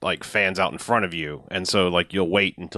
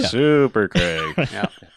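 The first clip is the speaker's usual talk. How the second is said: fake unimpressed tone, higher pitch; 7 semitones higher, 5 dB louder than usual. Describing how she said the name, imitating Craig's blasé voice. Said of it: "in his blasé voice".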